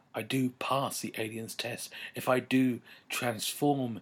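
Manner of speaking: ordinary delivery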